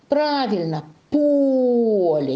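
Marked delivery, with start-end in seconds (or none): 1.1-2.3 поле loud and high, stressed О. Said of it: "Ударение падает на гласную О".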